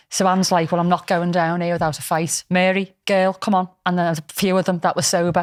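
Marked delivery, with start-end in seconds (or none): none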